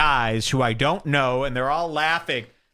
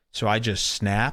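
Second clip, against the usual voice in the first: usual speaking voice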